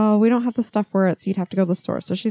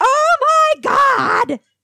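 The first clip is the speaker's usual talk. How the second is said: very high, loud, shrill outcry; 6 dB louder than usual. Retelling how someone reacted on opening the trash: imitating someone yelling. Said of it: "If you're gonna yell, back off from the mic".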